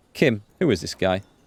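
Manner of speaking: ordinary talk, nothing marked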